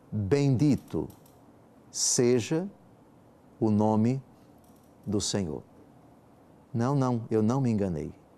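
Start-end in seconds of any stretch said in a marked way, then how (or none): 0.1-5.6 very slow, halting word-by-word reading, pausing mid-phrase. Reading a line from Job aloud: very slow. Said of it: "Eu vou ler bem devagar".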